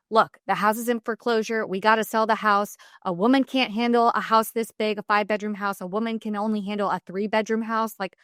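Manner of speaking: ordinary talk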